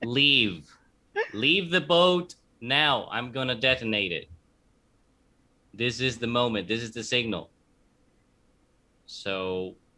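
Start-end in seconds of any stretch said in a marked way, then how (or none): 0.0-7.5 yelling at the top of lungs. Playing a character who warns the others to leave the boat: yelling at the top of lungs. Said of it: "I yell at the top of my lungs".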